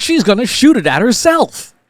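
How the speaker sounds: expressive, swooping, lively, very high dramatic read. Showing the kind of voice sample you want: lively, varied pitch. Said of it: "You see how much more variance there is in the voice".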